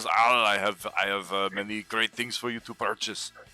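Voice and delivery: put-on Austrian accent with sales patter. Voicing the merchant Meridian greeting a customer: merchant Meridian's Austrian accent. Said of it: "my voice goes".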